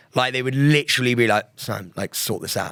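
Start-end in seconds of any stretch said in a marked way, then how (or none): 1.6-2.7 calm, quiet, menacing and scary tone. Retelling instructors' quiet telling-off: imitating a quiet scary telling-off. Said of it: "they were quiet, and the quiet scare".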